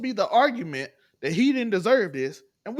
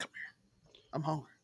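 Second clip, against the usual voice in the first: barely voiced, hushed, soft, breathy whisper; 7 semitones lower, 17 dB quieter than usual. Speaker acts out a line someone just whispers: retelling a whisper. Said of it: "just whispers like".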